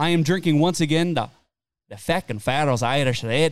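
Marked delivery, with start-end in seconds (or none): 1.9-3.5 put-on thick Irish-Scottish brogue. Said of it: "Was that Scottish?".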